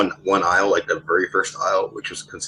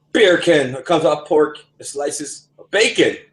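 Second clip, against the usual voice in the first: put-on Jamaican accent, higher; 8 semitones higher, 3 dB louder than usual. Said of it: "The accent".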